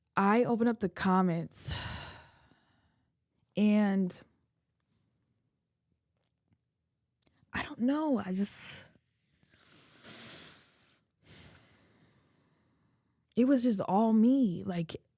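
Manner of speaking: tearful speech, talking through tears. Telling listeners about reading the comments, crying while talking. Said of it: "I can't even talk because I'm freaking crying too hard".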